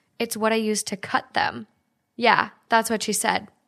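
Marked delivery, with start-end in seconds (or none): none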